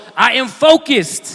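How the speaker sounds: said with firm conviction. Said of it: "say it one more time like you mean it".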